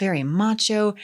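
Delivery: plain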